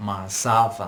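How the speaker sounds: mazava, with stress on the za syllable. Teaching the word mazava: stress on za in mazava. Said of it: "The stress is on the za".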